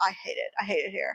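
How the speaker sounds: deadpan muttered grumble.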